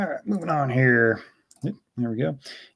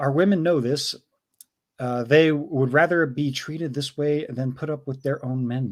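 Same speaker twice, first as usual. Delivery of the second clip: ordinary talk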